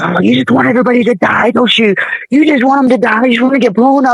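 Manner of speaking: put-on menacing evil voice, pitched high. Speaker recounts the voices heard in their head, imitating screaming evil voices. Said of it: "they were just screaming all these obscenities at me".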